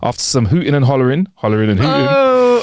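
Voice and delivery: ordinary delivery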